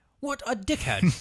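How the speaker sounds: put-on British accent, very high-pitched. Repeat the actor's reply, this time in a British accent as Benedict Cumberbatch. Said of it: "That's my British accent".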